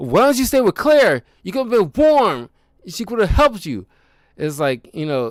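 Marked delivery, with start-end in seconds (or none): 0.0-3.9 very high, loud angry screaming. Retelling a character's scream at a man who froze to death: imitating Frank screaming. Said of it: "he's screaming like".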